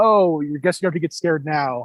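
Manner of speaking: menacing, threatening, taunting tone. Describing a favourite film scene, imitating Kurt Russell being menacing. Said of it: "really menacing".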